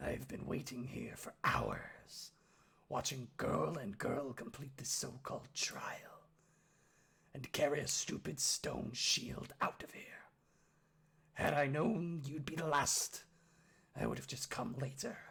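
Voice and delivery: deformed orc's gruff, husky voice. An orc speaks to Oski from beyond the altar, husky, gruff whisper. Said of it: "whispers a husky, gruff voice".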